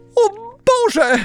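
very high, shrill, loud crying out. Paluszek wakes up inside a cow's mouth, exclaiming. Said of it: "zawołał".

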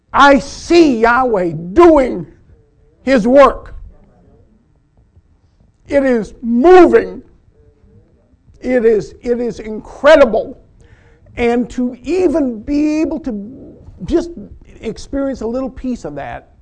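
emotional, deeply moved, voice rising high. A speaker praising the lectures apologizes for getting emotional: emotional. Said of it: "I'm sorry, I get emotional".

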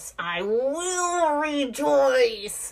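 forceful, emphatic, through gritted teeth, "will" drawn out. Showing how the line sounds when frustrated: emphatic, through gritted teeth. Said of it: "I will say it like that with the gritting teeth".

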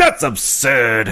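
put-out, huffy voice. Retelling how a man reacted to a theory about a vanished person: mock-huffy. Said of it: "he gets all huffy".

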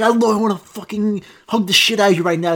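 fierce, over-intense loving voice. Acting out telling a dog you love it: mock aggressive tone to a dog. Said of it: "why are you getting so aggressive".

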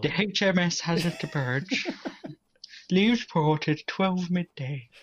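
put-on old man voice. Announcing a sponsor as if a ship sets sail, put-on old man voice. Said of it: "Is that your old man voice? It is".

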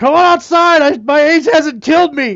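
loud, combative screaming. Acting out an imagined movie scene where an older guy calls Rocky outside: screaming a challenge. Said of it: "scream out".

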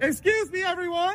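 loud, high shouting. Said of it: "I'll start yelling".

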